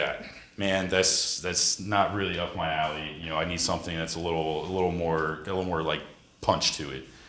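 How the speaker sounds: ordinary talk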